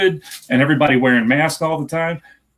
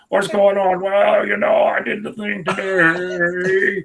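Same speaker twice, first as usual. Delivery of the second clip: creaky little vocal fry voice, "today" drawn out; 4 semitones higher than usual. Mocking people who put on an affected way of talking: mocking vocal fry voice. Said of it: "the talking like this, and they got their little voice saying".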